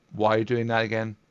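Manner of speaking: ordinary talk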